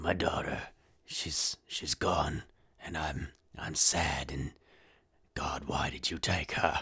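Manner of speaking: soft, hushed, raspy put-on movie voice. Showing how an actor talks throughout a whole movie, imitating a raspy movie voice. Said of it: "raspy voice thing".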